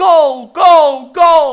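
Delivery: mock scream, high-pitched and loud.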